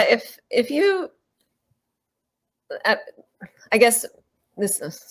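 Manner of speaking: halting, stammering, stumbling over the words. Interviewer starting a question to a Vietnam vet, stammering. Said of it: "I'm I'm stammering".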